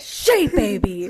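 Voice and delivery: loud, cross, mad scolding tone. Showing how she would say his nickname when he's in trouble, with a mad scolding tone. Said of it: "Did that sound like I was mad at you?".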